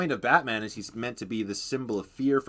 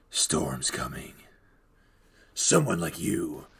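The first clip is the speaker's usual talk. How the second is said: very low, deep put-on superhero voice; 8 semitones lower than usual. Showing off the one impression done decently: Bale Batman voice. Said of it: "the only one I can do decently is the Bale Batman voice".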